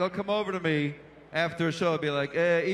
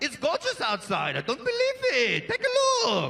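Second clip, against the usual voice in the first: put-on irritated enthusiasm, very high and swooping; 10 semitones higher than usual. Imitating Israelis praising the weather: imitating someone sounding annoyed. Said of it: "they always sound annoyed".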